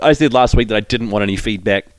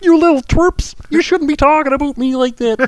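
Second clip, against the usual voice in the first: very high, shrill put-on voice held throughout. Retelling a voicemail left from the car: Jordan Peterson voice. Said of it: "couldn't drop the Jordan Peterson voice".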